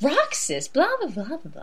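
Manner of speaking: high, swooping, lazy nagging whine. Describing a woman's voice, the speaker imitates her lazy voice. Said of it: "she has a kind of, like, lazy voice".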